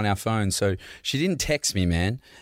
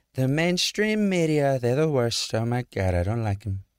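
offhand, tossed-off ad-lib, muttered as if to oneself; 3 semitones higher than usual. Answering which celebrity impression is best: Donald Trump impression. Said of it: "He'll be like".

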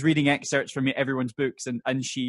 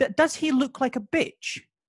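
play-acted very high, calm, forward, direct voice; 11 semitones higher than usual. Retelling a film character's calm, forward question, imitating a calm, forward question. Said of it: "he asks very calmly and very, um, ag-, ag-, but yeah, very, uh, forwardly".

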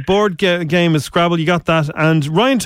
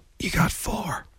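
very quiet, hushed whisper; 11 dB quieter than usual. Telling a caller their score after saying so: said very quietly. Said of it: "I'm gonna say this very quietly".

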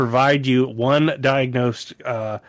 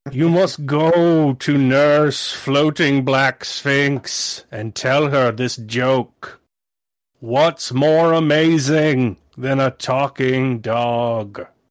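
grand, intoning voice of a giant god. In a tabletop game, a giant tree-man deity sets a player a price, intoning. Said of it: "A giant beanstalk that eventually bifurcates into the shape of a man goes shooting through the roof. / It's just Miss Zephyr's taking a nap and there's just a giant 50-foot tree man jutting out of her".

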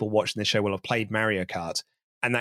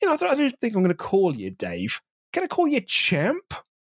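high-pitched, mocking put-on voice. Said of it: "it's Dom walking up to him being like".

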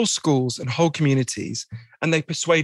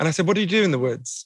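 ordinary talk

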